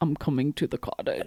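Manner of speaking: low, breathy, dropped voice, half-whispered. Coached by another speaker, someone attempts the line in an Ilya voice, lowered. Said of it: "drop your voice to be like Ilya / I can't do accents".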